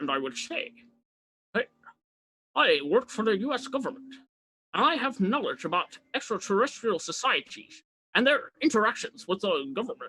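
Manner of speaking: disguised, altered, anonymous-sounding voice. Showing how an anonymous source would sound on the news: disguised anonymous-source voice. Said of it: "My voice would sound like this".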